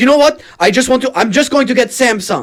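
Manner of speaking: high-pitched, loud Syrian accent.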